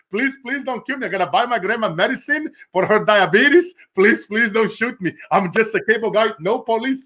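high, pleading, repeated put-on begging. Retelling being mistaken for a cop while selling cable, mock-begging for his life. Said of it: "I'm like".

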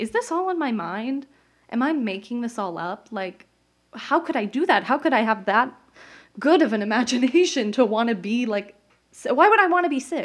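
emotional, getting worked up. Retelling doubting herself after a doctor's words, getting emotional. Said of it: "getting worked up here".

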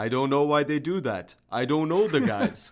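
put-on Eastern European-accented speech. Recounting an episode's clip of Kukoc after a poor game, in Kukoc's Eastern European accent. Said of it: "in his, you know, Eastern European accent".

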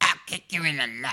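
put-on bratty cartoon child voice. Acting out Eric Cartman meeting Mickey Mouse; do an Eric Cartman voice. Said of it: "when Eric Cartman met Mickey Mouse".

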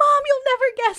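very high, loud, stoked excited gush. Speaker retelling calling mom after a pitch meeting, imitating own excited voice. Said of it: "I was so fucking stoked".

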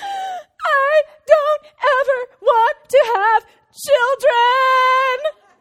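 high-pitched, loud, slow sobbing wail. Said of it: "again, lets out another wail".

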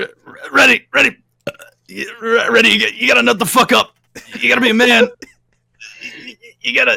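stammering, creaky, rough, high-pitched rant. Picturing the character's rant done as Rick and Morty: Rick and Morty voice. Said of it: "Rick and Morty just going".

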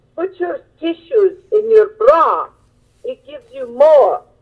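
put-on thick Italian accent, high and swooping. Retelling what her mother told her when she went to get a job: thick Italian accent. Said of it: "in her thick Italian accent".

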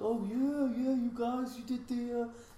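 bad put-on Danish accent, very high and slow. Retell what a man said when you met and talked about bands, in an awful danish accent impression. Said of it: "in this like sort of Danish".

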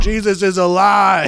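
high, loud, slow mock preacher proclaiming.

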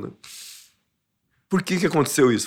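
tearful, weeping, crying while speaking. Recalling feeling guilty for his father-in-law's death, crying while speaking. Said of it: "eu chorava igual eu tô chorando agora".

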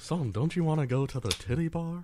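high-pitched cartoon sitcom dad voice. Imagining a dad pleading with his son, in a Hank Hill voice. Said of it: "Hank Hill showed up".

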